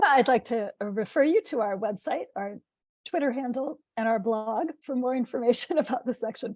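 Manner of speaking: voice nearly giving out. Ending a report on the section to an audience, voice giving out. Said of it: "my voice is gone".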